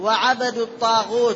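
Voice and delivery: ordinary talk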